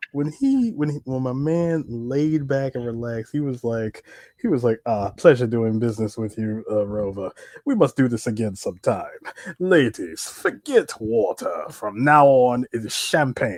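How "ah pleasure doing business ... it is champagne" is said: deep, refined, sophisticated dog voice. Retelling what the dog said after getting the bones: deep-voiced sophisticated dog voice. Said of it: "the most deep voiced dog, the most sophisticated dog".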